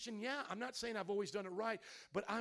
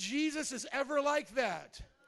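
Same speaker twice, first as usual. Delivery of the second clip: plain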